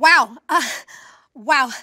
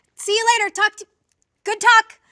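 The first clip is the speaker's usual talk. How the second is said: higher, slightly raised call-out; 6 semitones higher, 4 dB louder than usual. As she walks away, call after her, calling out a little louder. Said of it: "you're kind of getting a little louder".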